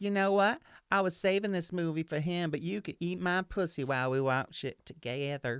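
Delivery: put-on Southern accent. Acting out what she said while they watched a movie: put-on Southern accent. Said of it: "apparently I was dating somebody from the South".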